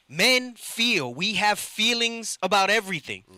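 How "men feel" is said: slow, deliberate, careful emphasis on each word. Repeating his point to the others, the speaker says it again: said slowly. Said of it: "let me say that again slowly".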